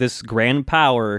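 ordinary delivery

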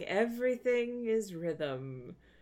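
very slow, drawn-out lecturing professor's voice. Describing how the professor starts class, imitating him talking really slowly. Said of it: "he's like talking really slowly".

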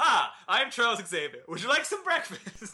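one unbroken run-on, rattled off with no pauses. Quoting a favorite movie line, Charles Xavier line with no pauses. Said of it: "That is said with no pauses".

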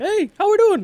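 squeaky, super high-pitched voice. Imagining how a man might sound when he comes in, super high-pitched voice. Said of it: "he's just got this super high-pitched, like".

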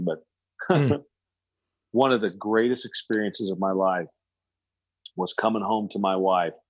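voice holding back tears, trying not to cry. Telling a personal story about a work decision, holding back tears. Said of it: "I'm not going to get emotional here".

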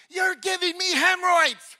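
loud, high-pitched hollered yell. Retelling what a man yelled while leaning out at them, retelling a yell. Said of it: "he leans out".

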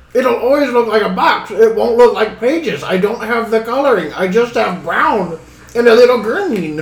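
put-on rock gnome voice. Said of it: "This rock gnome just shoot past you".

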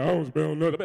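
put-on deep, dropped, newly deepened young male voice. A parent imitates their oldest son, putting on his deep voice. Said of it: "his voice is deep now".

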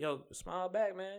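high, laid-back, easygoing buddy voice.

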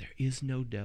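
hushed, composed, unruffled, calm half-whisper. Demonstrating how a calm preacher would say the line, in a Rob Bell half-whisper.

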